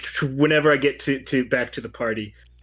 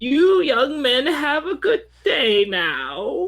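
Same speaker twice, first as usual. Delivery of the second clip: put-on sweet little old lady voice, very high-pitched; 5 dB louder than usual. Describing paddling past two young men, old lady impression. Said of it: "My best old lady impression".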